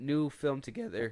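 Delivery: voice cracking and breaking mid-phrase. Announcing a new film together, voice cracking on the words. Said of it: "my voice cracked".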